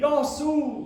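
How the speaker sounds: high, loud called-out speech in Greek.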